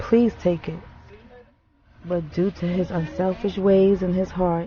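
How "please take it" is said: usual speaking voice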